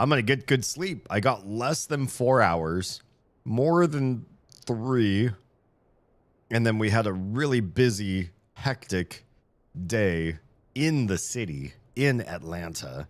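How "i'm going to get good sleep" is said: high, loud, hopeful voice. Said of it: "And then I was like".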